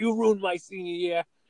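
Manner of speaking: screaming, pitched high. Retelling what a senior screamed at the coach: imitating someone screaming. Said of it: "he screamed at Coach Manos".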